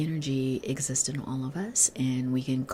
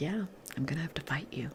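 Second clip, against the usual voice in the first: calm, hushed, quiet, unruffled, peaceful tone; 7 dB quieter than usual. Describing a peaceful warrior character and acting out his line: mimicking a calm, quiet voice. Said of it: "he's talking in a calm, quiet voice".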